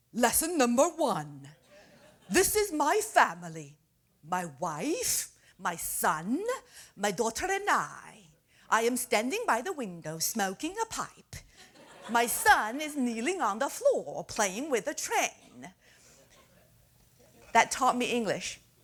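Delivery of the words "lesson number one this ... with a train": authoritative, slow, sing-song British male teaching voice. Recalling an English lesson record from childhood, in an authoritative British male voice. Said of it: "hear the authoritative British male voice".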